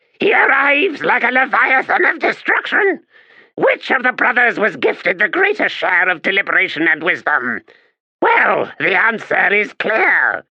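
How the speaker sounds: shrill, grating, very high-pitched voice. Reading a cried warning about an arriving rival: high-pitched grating voice. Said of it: "in his high-pitched, grating voice".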